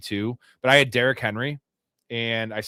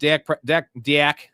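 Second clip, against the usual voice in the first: Fargo-style accent; 4 semitones higher, 5 dB louder than usual. Speaker announcing his team's pick, sounding like a dude from Fargo. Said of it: "I sounded like a dude from Fargo".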